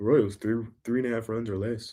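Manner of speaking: buttoned-up, stiff, soft, stuffy pundit-style voice. Imitating how a regular show guest gives his picks, in a Rufus voice. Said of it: "That was my Rufus voice".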